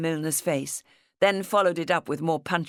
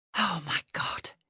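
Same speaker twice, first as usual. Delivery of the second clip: hushed, breathy whisper under the breath; 5 dB quieter than usual. Archie, breathing again once the detectives have gone, steps outside: whispered. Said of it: "he whispered".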